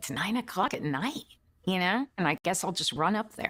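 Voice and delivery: ordinary talk, nothing marked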